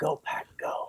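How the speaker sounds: whispered, barely audible, very quiet and breathy. Retelling what a businessman said on seeing a Packers jersey: imitating someone saying it quietly. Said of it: "he very quietly said".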